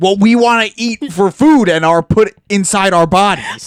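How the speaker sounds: very loud, high-pitched yelled outburst in character voice. Imitating a man in a video, like a Tim Robinson character. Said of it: "He's talking like a Tim Robinson character".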